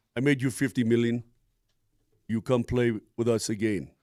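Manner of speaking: voice dropped way down. Taking a turn at a Jokic impression on a call: Nikola Jokic impression. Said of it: "you do your Jokic".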